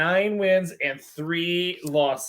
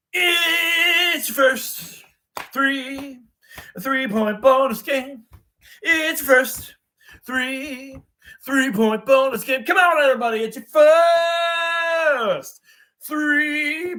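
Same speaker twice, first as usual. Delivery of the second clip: slightly gruff, rough, pitched-up game announcer voice; 9 semitones higher than usual. A host shows off the game announcer voice he has been using, a little gruff. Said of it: "that sounded a little gruff".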